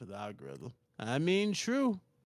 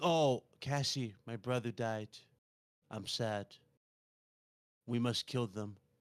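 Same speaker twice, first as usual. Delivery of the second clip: play-acted, slow, stiff, wooden, read-off-the-page delivery. Retelling a show character's line, imitating stiff read-off-paper delivery. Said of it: "she was reading off a piece of paper".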